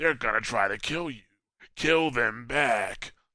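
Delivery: put-on rough-throated voice. Mocking a game character's annoying sayings: imitating Varix's rough voice. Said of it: "Somebody get me a throat lozenge".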